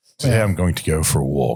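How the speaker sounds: posh British accent. Acting out their own inner voice for the others, in a posh british accent. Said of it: "my internet voice is like uh, is like um a posh like British person".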